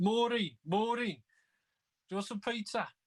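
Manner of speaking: put-on very high, slow, drawn-out Brummie accent. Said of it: "throwing out the, the Brummie accent".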